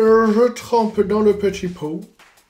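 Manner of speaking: slow, bad, tacky put-on English accent. Narrating a step in French, in a bad English accent. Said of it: "Pourquoi je me suis fait un accent anglais euh, de mauvais goût?".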